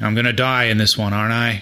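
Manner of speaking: low, deep leading-man star voice. Betting on what Harrison Ford will say about his next part, do a Harrison Ford impression. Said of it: "That's my Harrison Ford impression".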